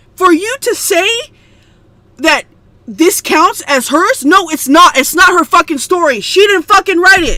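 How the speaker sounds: furious, heated, angry outburst. Speaker ranting to a listener about a story, angry. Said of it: "I'm sorry if I sound angry".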